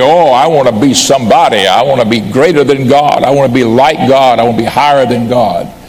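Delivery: ordinary delivery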